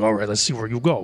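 through gritted teeth. In a tabletop game, a player's character grapples a spider, speaking through gritted teeth. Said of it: "through my gritted teeth".

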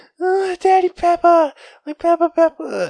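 put-on very high, drawn-out weepy toddler wail. A father retells how his child calls out for him, imitating her crying.

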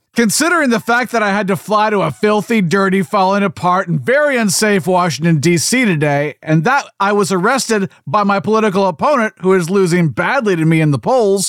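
ordinary delivery

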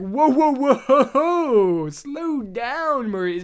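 booming, very slow, drawn-out cartoon-film voice. Retelling a scene from the animated film, imitating Gaston. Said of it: "he's like".

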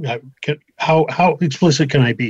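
ordinary delivery

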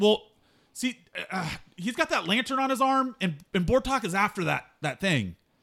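ordinary talk, nothing marked

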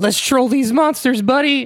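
very high-pitched, loud, excited call, not whispered. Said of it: "Shaggy looks at Scooby and whispers".

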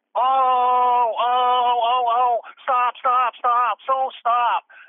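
put-on very high, very slow, drawn-out drunken babble. Retelling a late-night encounter beside a bar: imitating a drunk woman. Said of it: "this really drunk young lady".

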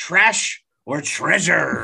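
hammy, rough, put-on swashbuckler pirate growl. Describing the podcast's Spotlight series, put-on pirate voice. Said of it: "I don't know why the pirate thing happened".

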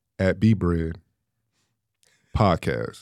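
very low, deep, slow, drawn-out, deliberate delivery. Asked to say the podcast handle again, slowly: said slowly. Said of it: "Say it slow".

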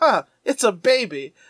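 put-on slow, offhand, condescending, dismissive drawl. Recapping a cartoon episode, the speaker quotes a character, mock-dismissive tone. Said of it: "He says it in such a dismissive tone".

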